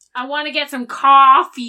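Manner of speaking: strong Boston accent, very loud. After talk of hearing the Boston accent, a line in strong Boston accent. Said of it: "that very strong Boston accent".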